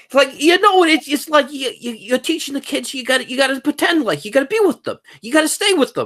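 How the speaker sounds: put-on, very high Jersey accent. Retelling what a guy said, imitating his jersey accent. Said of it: "let me see if I can imitate his accent".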